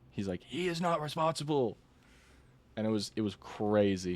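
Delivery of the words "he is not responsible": put-on high, livid, heated, furious yelling outburst. Retelling a livid coworker's argument: imitating someone screaming. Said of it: "He was, like, screaming at me".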